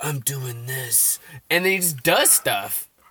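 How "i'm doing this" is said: barely-there, hushed half-whisper. Mocking an actor who barely speaks in his movies, Keanu Reeves half-whisper. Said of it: "he kind of whispers".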